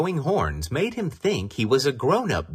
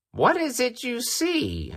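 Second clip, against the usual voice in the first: very high-pitched, uneasy, anxious voice; 14 semitones higher than usual. Narrating the fox asking the rooster what he sees, a little anxious. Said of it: "asked the fox a little anxiously".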